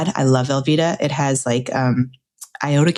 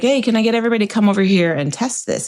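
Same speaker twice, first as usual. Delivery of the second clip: mock chef voice, pitched up, calling out; 7 semitones higher than usual. Retelling how a man making cheese sauce called everyone over; imitating him calling everyone. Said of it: "So I saw him and he's like".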